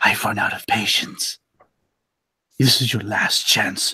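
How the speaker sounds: gentle, soft, close whisper. Threatening a fallen enemy in character, whispering softly into his ear. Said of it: "I'll whisper softly into his ear".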